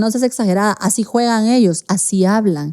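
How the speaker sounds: ordinary talk, nothing marked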